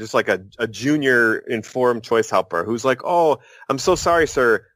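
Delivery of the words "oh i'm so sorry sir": put-on timid, apologetic, meek, slow foreign-sounding accent. Retelling a phone call, imitating a junior helper: meek foreign-sounding voice. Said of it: "this very meek, you know, like, foreign sounding".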